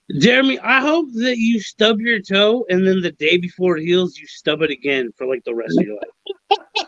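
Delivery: ordinary delivery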